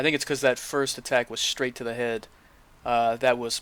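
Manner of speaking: ordinary delivery, nothing marked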